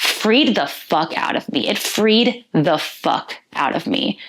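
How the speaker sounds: hard-hitting, forceful emphasis on each word. Sharing a personal realization after processing feelings: emphatic. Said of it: "Sorry for the emphasis".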